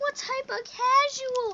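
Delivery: loud, high, slow mocking voice.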